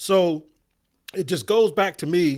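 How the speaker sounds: voice breaking slightly. Speaker discussing two quarterbacks, voice cracking a little bit. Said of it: "my voice is cracking a little bit".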